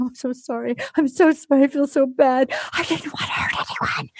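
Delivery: acted-out crying, sobbing through the words. Retelling how a contestant apologized to herself: imitating someone sobbing. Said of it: "She's sobbing, sobbing".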